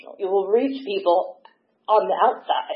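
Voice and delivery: choked up, voice catching with emotion. Speaker telling about their own experience, getting emotional. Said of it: "I'm getting emotional".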